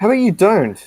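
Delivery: very high, loud, angry tone. Snapping back during an argument about making pancakes from cake mix, as an angry retort. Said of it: "Why are you getting angry".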